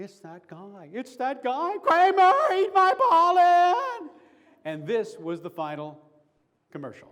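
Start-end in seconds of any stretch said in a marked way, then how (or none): 0.0-4.1 mock excited scream, much higher and louder. Describing how the edited commercial sounded, retelling a scream. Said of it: "And it sounded like".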